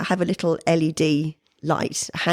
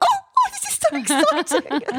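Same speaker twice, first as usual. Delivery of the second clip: very high, squeaky, gushing excited voice, swooping pitch. Retelling own reaction to a finished set: imitating own squeaky excited voice. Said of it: "I go a little bit squeaky".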